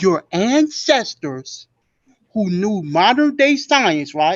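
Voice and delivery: slow, measured, deliberate, drawn-out words. Answering in a debate, mocking the other's slowness: talking slowly. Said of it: "I'm gonna talk slow to you too".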